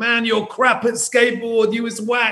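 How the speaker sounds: put-on very high-pitched yelling shout. Retelling how skateboarders mocked the speaker's skating, imitating skateboarders shouting. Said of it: "these guys started shouting".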